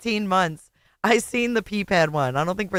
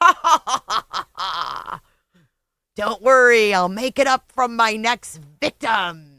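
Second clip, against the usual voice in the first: loud laugh running into laughing speech; 5 dB louder than usual. Showing what someone in a picture seems to be saying: imitating Lauren laughing. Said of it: "and Lauren's like".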